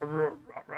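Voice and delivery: very low, soft, mock rumbling voice.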